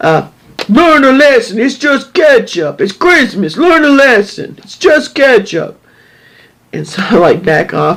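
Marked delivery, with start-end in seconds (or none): 0.7-5.8 bad, high, put-on New York accent. Retelling what a man said about his wife: bad New York accent. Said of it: "I can't do a New York accent".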